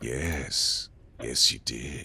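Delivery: small, soft, very slow inner voice. Voicing a voice heard in a character's mind: little voice in your mind. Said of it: "you hear a little voice in your mind that's like".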